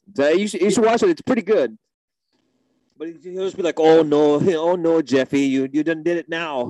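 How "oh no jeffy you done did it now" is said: put-on drunk Midwest accent, slower. Recommending something to watch, quoting its character in a drunk midwest accent. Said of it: "he had like the annoying Midwest accent too".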